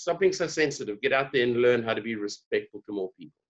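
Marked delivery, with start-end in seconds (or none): none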